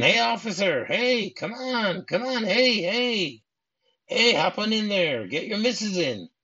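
put-on high, stretched-out, drawn-out screaming. Retelling a film scene, Marvin driving up in a golf cart: imitating Marvin screaming. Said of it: "And he starts screaming".

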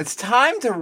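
cracked, breaking voice, cracking up high. Starting the podcast's tagline with the co-host: voice cracking. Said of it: "did my voice just crack?".

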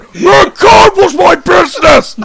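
very loud, very high, drawn-out shouting. Imagining Sylvester Stallone as Jacob Marley: shouting like Sylvester Stallone. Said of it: "Just shouted in the same way that he did".

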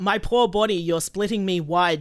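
ordinary delivery

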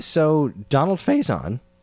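voice cracking. Bringing up a breaking news story to the other speaker, with a cracking voice. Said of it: "excuse my cracking voice".

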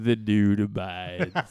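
very low, deep delivery. Doing an impression for the other to guess: Sam Elliott impression. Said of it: "Sam Elliott".

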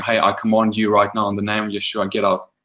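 plain

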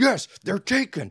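frantic, very high-pitched, shrill screaming yell. Retelling how a guy at the movie answered, imitating someone screaming. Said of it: "The guy starts screaming at him".

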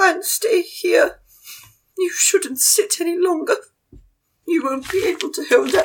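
high, posh voice. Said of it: "Madame Jean just goes".

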